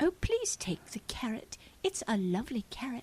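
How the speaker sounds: put-on high-pitched London English accent. Retelling a niece from London offering a carrot: imitating niece's English accent. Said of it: "I want to have an English accent".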